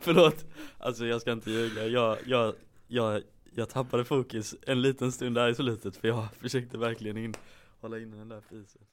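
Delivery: giggling through the words while speaking. Apologizing for losing focus, laughing while talking. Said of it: "jag vet inte varför jag skrattar".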